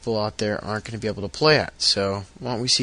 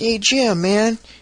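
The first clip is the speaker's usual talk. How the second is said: put-on very high, raised little kid voice; 12 semitones higher, 6 dB louder than usual. Retelling what his little brother said while he did dishes, imitating little brother, higher voice. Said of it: "he sounds like me, but in a higher voice".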